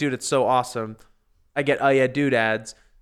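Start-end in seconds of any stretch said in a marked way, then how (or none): none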